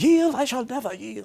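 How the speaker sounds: very high, loud put-on English accent. Retelling what his brother said at a yield sign, in an English accent. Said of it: "in an English accent".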